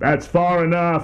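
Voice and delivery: booming stentorian call. Narrator voicing someone calling out to her as she reaches the stairs, stentorian voice. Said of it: "A stentorian voice calls out".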